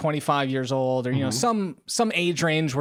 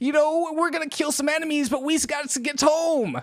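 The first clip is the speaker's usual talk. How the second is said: very high-pitched, put-on New Jersey accent; 13 semitones higher than usual. Quoting some dudes from a game he played, in his best jersey accent. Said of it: "that's my best Jersey accent".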